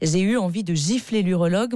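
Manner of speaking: ordinary talk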